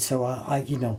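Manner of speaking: ordinary talk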